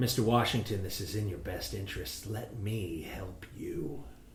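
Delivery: very soft, low, hushed half-whisper. During a game scuffle, a character leans in close to the player's character, half-whispering. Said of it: "in the scuffle whispers".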